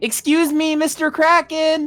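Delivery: loud yelling, screaming. Voicing a character running across water toward a kraken: screaming. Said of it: "in the background screaming".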